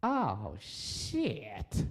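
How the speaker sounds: gobsmacked, floored, wowed little exclamation. Imitating own reaction to seeing a woman walk by: imitating own reaction to a woman. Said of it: "me doing an impression of myself seeing a woman".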